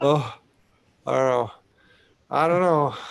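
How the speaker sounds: worn-out, tired, exhausted, drained voice. Chatting with others on a live stream, sounding exhausted. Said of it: "You sound exhausted".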